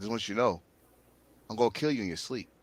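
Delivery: calm, hushed, sick murderer voice. Imitating a man's chilling promo threat: mock calm murderer voice. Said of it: "calm voice, like a goddamn murderer".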